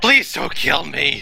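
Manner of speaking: rough, raspy, hissed delivery. Narrator voicing a character surrendering on the rooftop: yelling and hissing. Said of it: "yelling and / hissing".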